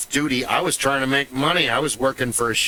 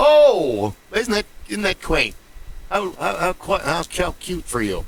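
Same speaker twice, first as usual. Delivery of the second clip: put-on high, swooping, sing-song English accent, politely bemused; 6 semitones higher than usual. Imitating an English person who hears about Morris dancing: imitating an English person. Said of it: "And they go".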